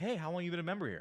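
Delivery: light, nice, upbeat, playful friendly tone. Recounting walking up to her to start talking: upbeat playful friendly tone. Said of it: "Up uppity tonality, right? Playful, nice, friendly tonality".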